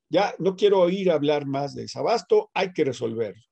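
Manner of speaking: plain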